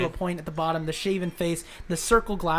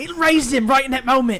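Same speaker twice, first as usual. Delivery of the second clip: put-on British accent, loud and high; 8 semitones higher, 10 dB louder than usual. Voicing a storyteller character after being asked to do it: British accent. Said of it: "he's the only British guy".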